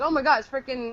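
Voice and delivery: ordinary talk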